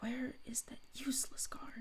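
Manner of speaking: muttered under the breath, very hushed whisper. Narrating a scene, the speaker voices her character whispering under her breath. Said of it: "she just whispers under her breath".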